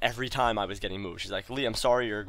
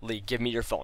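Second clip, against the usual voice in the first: mock furious, angry voice. Retelling how a teacher demanded the phone: imitating a furious teacher. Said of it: "really furious at me".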